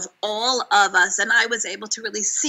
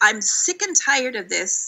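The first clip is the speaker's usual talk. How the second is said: usual speaking voice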